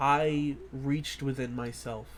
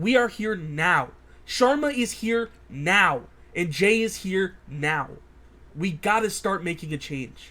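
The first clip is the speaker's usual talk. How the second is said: raised, shouting voice; 5 semitones higher, 9 dB louder than usual. In a drama, a character urges the others to make a change now: raised voice. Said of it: "I didn't mean to raise my voice".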